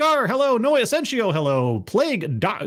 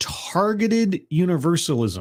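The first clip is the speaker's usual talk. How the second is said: slow, careful, enunciated pronunciation. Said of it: "spelling bee deconstruction of the phrase".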